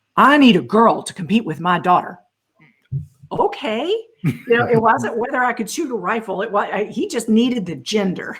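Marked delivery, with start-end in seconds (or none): 0.2-2.2 put-on big, slightly gruff voice. Retelling what a man said to you after morning training, imitating a big, slightly gruff voice. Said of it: "this big, barely gruff voice".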